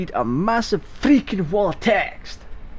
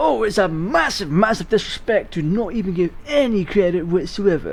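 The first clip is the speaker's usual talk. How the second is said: normal talking voice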